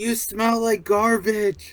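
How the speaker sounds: put-on yell. Retelling yelling an insult at a wrestler: imitating own past yell. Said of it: "I yelled out to him".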